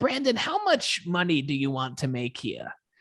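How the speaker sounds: put-on Long Island accent. Recounting a job interview, quoting the woman who interviewed him, thick Long Island accent. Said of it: "Thick Long Island accent".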